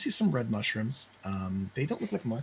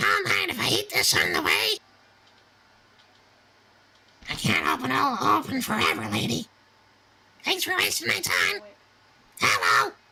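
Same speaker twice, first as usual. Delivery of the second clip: squeaky nasal chorus, very high and swooping; 6 dB louder than usual. Voicing a swarm of tiny creatures speaking up to the players, in tiny nasally voices. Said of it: "a bunch of tiny, nasally voices speak up".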